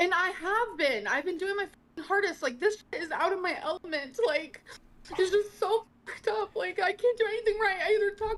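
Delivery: tearful, high-pitched crying speech. Complaining that nothing is going right: crying while talking. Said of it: "Why are we crying now?".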